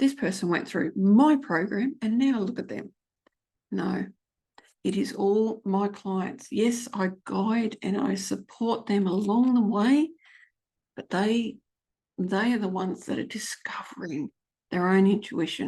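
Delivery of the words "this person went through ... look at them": plain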